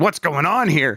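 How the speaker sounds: put-on frightened, scared, nervous voice. Speaker acts out how she would have reacted, imitating her scared voice. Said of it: "in that voice".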